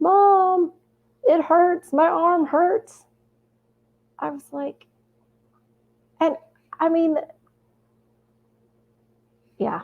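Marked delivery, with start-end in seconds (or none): 0.0-3.0 high-pitched, mild mock yell. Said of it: "And he's yelling".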